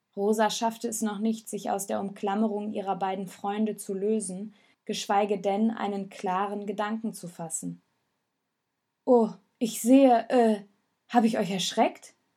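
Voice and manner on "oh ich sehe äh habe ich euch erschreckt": embarrassed, sheepish stammer, louder. A man sees he has frightened Rosa and her friends, embarrassed stammer. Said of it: "stammelte der Mann beschämt".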